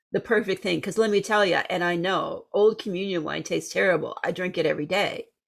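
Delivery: ordinary delivery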